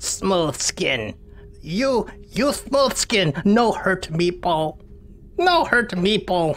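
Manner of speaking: high, slow, frightened, pleading creature voice. Speaker voices a creature that curls up in the fetal position, creature voice. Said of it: "and it says".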